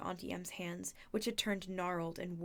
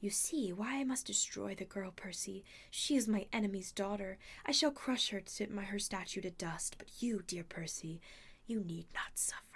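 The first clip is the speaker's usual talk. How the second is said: soothing, comforting purring voice. Narrator reading a character who shifts from snarling back to a comforting purr. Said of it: "her voice modulated back into a comforting purr".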